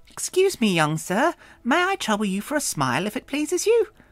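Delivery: very high, put-on British accent. In a story, Jexa addresses a young sir, vaguely feminine, unconvincing British accent. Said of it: "spoke in a vaguely feminine voice and in an accent that was potentially British".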